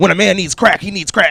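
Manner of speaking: very loud, high-pitched put-on strung-out street voice. Retelling a movie scene where a ticket scalper is caught: imitating a man acting like a crackhead. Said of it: "acting like a crackhead".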